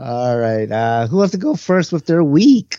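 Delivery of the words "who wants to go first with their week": voice breaking and cracking mid-line, pitched up. Host turning to the others to start the round, voice cracking. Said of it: "And my voice is cracking".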